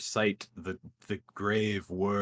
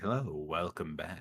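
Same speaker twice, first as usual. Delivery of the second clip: smug devil character voice; 2 semitones lower, 4 dB quieter than usual. Voicing a smug shopkeeper welcoming a player back: smug Mister Infamy voice. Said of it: "looks at you with a smug look".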